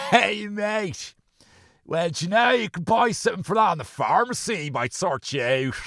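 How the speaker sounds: mock shouting. Acting out what one wanted to shout at a performer: acting out a shout. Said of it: "I wanted to shout at him".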